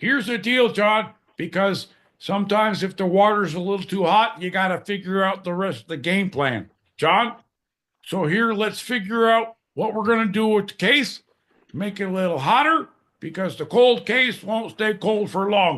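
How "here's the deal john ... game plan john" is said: put-on Chicago sportscaster voice and accent. Imitating a sportscaster the speaker listened to, in a chicago sportscaster voice. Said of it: "it's like that Chicago. If you you do the voice".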